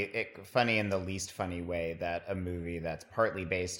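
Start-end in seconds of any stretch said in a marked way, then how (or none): none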